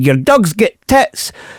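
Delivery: put-on pure broad Scottish accent, slow. Retelling what a man with Tourette's kept saying, in a broad Scottish accent. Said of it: "a pure broad Scottish accent".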